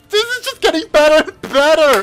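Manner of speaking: very high, fast, thrilled, excited yelling. Reacting to a fight scene while watching: yelling in excitement. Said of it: "I'm yelling too much".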